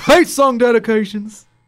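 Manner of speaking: very loud, very high-pitched blaring announcer voice. Announcing the name of a regular segment: too loud announcement. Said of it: "that was a bit loud".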